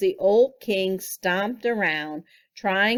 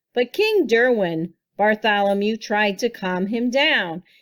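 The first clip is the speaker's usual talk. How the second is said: plain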